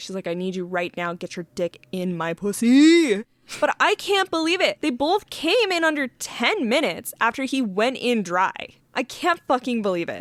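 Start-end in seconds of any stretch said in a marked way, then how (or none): 0.3-3.2 put-on begging, mock pleading. Describing a couple in a story, acting out the woman's line, imitating someone begging. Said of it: "begs for him to just go in".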